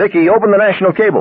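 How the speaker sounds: very high, far-off, distant yell. A voice on the phone turns away to yell to someone: yelling from a distance. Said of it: "yelled distantly".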